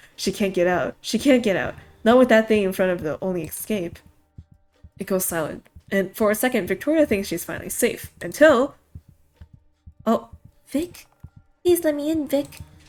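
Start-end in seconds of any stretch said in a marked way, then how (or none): 10.1-12.5 put-on, pitched-up copied woman's voice. A thing blocking the only escape calls to a trapped woman, mimicking a woman's voice. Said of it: "Stop using her voice".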